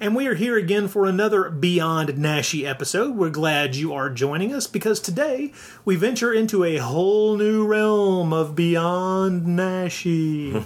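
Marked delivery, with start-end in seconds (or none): 6.8-10.5 slow, eerie, spooky ghostly voice. Podcast host introducing the episode: eerie ghostly voice. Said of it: "I don't know why I'm doing the ghostly voice".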